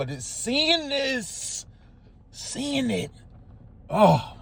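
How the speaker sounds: high, hushed, breaking voice, overcome with emotion and awe.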